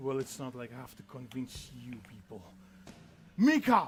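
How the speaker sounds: quiet mutter under the breath. Voicing a character as an attack begins: muttering under his breath. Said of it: "goes from under his breath".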